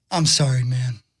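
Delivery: sincere, sweet, very deep voice. Retelling how a man he complained about loudly turned around, imitating a sweet apology. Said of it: "he said it in a very sweet way".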